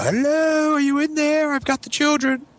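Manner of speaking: mock very high, shrill yelled call. Retelling the ex-wife knocking on the door: imitating ex-wife yelling. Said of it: "yelling in the window".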